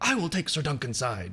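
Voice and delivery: frustrated, fed-up, put-upon tone. Retelling how Baelor announces he will join Duncan: imitating Baelor's frustrated delivery. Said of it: "kind of more like, I don't know, frustrated".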